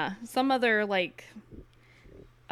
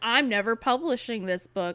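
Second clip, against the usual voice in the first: ordinary talk, nothing marked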